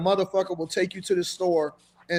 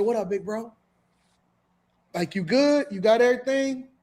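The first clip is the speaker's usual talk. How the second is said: salesy street hustler-style delivery; 4 semitones higher than usual. Acting out how a hustler offers food stamps in the store: imitating a hustler's sales pitch. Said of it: "And that's the pitch".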